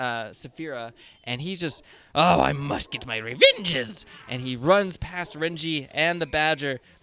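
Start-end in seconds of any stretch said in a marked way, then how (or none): 2.1-4.0 loud, swooping, dimwitted goblin voice. Voicing a dumb goblin set on revenge: dumb goblin voice. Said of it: "he's a dumbass".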